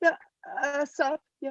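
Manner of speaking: flustered, jittery tone. Greeting someone who just woke up and asks where they are: nervous. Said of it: "I'm totally fucking nervous".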